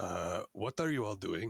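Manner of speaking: very sleepy, drowsy, just-woken lizard creature voice. Voicing a lizard man walking by the players: very sleepy lizard man voice. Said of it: "rubbing his eyes, walks by the room and looks up and goes".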